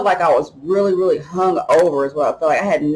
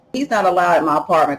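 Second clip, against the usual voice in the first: plain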